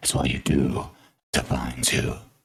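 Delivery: very deep, low, rumbling bass voice. Performing a line in a put-on voice for the others; very deep bass voice. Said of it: "The bass of your voice is like rattling my eardrums".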